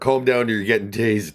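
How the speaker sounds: very loud, high-pitched shouted police voice. Retelling how a cop yelled from outside the car: imitating a cop yelling. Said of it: "The cop yelled from outside the car".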